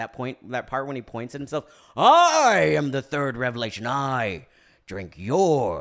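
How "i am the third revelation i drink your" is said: very loud, slow, booming, with the "I" stretched. Joking about allergy trouble with a Daniel Plainview impression. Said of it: "Daniel Day-Lewis impressions".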